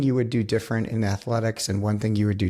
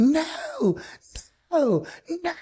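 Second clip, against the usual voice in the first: mock very high, swooping, crying scream. Retelling a woman who almost killed the speaker, imitating her screaming. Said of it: "She's screaming at me and".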